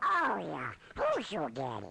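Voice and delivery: put-on cartoon duck voice. Playing an old audio file of someone impersonating Donald Duck: Donald Duck voice. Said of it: "somebody doing an impression of Donald Duck".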